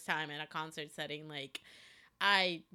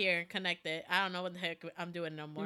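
plain

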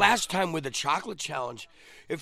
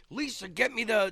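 acted-out frantic, panicked, urgent tone; 4 semitones higher than usual. Retelling calling for help while burning from the heat: imitating own panicked plea. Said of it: "I'm panicking and I'm saying".

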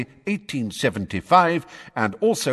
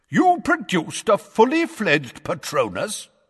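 booming, resounding, high-raised voice; 6 semitones higher than usual. A witch cuts across a wizard's answer with a question, in a booming voice. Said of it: "cut across him in a booming voice".

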